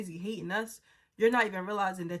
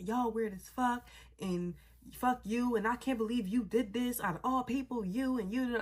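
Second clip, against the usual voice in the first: play-acted furious, angry, snapping rant; 3 semitones higher than usual. Retelling how she snapped at the speaker by the lobby exit: imitating someone snapping angrily. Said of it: "just snapping at me".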